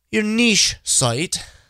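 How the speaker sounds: terrible put-on English accent, high-pitched. Saying a phrase the way people in England and Australia would, terrible English-style accent. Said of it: "that's a terrible accent".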